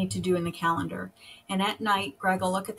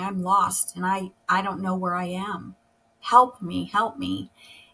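put-on crying voice. Retelling a call to her husband while lost driving: retelling her own crying call. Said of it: "I've called Greg at work crying".

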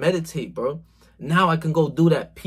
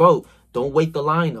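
put-on very serious, dead-serious tone. Retelling how a guy at the gym warned him: imitating someone speaking very seriously. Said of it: "so serious".

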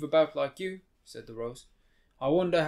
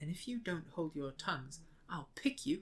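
very quiet, hushed, menacing, threatening whisper; 14 dB quieter than usual. Alice stoops to the talking daisies and threatens them, whispered threat. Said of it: "She whispered".

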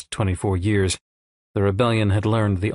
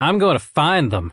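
defiant, pitched-up declaration; 8 semitones higher, 4 dB louder than usual. After a promise of revenge, one person answers, defiant. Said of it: "then defiantly".

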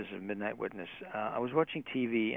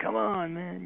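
high, pushy, pressing party-guy voice. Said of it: "one of those kind of guys".

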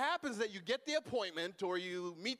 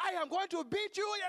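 put-on angry scolding voice, higher; 9 semitones higher than usual. Retelling a mother scolding a child before the phone rings: imitating mom's angry house voice. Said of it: "a house voice".

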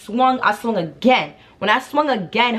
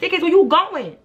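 put-on shouting, higher; 9 semitones higher than usual. Retelling a confrontation, calling after a girl: retelling own yell. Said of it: "I'm yelling, I'm like".

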